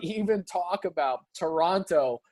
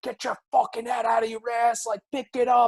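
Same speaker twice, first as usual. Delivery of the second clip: mock screaming, higher pitch, faster; 5 semitones higher than usual. Describing a hothead coach, retelling him screaming at players from the bench. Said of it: "you even saw him on the bench just screaming".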